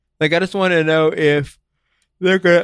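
yawning while talking. Speaker wondering aloud in a conversation, yawning while talking. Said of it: "I'm yawning so much".

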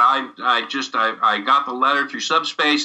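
ordinary talk

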